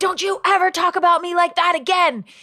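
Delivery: mock, very high-pitched, thrilled, excited shriek. Retelling an excited man's outburst in your viral interview with him, imitating someone screaming. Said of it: "he screamed".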